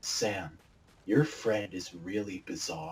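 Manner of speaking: dead serious, grave, deep, hushed, low and slow. Speaker quoting their mom after a friend's visit, imitating her very serious tone. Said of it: "in the most serious tone of voice".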